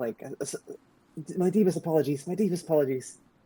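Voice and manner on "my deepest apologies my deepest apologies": high, abject, groveling voice, repeated. Voicing a character groveling on the ground before his lord: groveling apology. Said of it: "bowing and".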